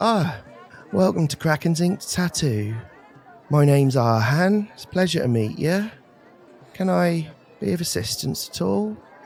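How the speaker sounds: gentle-mannered voice. Narrating a tabletop scene, a character greets visitors to a tattoo shop, softly spoken Arhan voice. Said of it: "He's very softly spoken".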